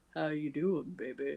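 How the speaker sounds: very deep, quiet, soft voice. Describing how Teller surprisingly sounds when he talks, deep Teller impression. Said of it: "You don't expect Teller to have that deep of a voice".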